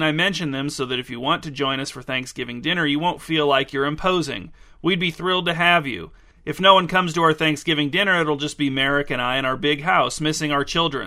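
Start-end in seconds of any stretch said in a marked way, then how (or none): none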